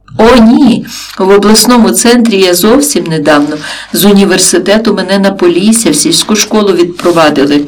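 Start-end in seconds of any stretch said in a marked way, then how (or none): none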